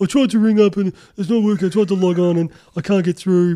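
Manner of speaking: very loud, high, dopey, whiny dumb voice. Imitating people who ring up complaining: imitating callers sounding dumb. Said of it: "you just make people sound real dumb".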